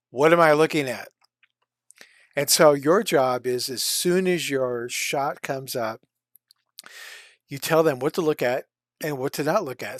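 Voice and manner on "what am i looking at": annoyed, put-out, irritated raised voice. Explaining dailies, quoting the visual effects supervisor in a mock-irritated tone. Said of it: "will say in an irritated tone of voice".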